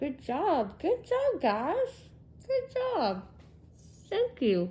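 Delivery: talking with mouth full. Tasting the sourdough from the recipe and thanking the guys, talking with mouth full. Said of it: "I have a mouthful of bread".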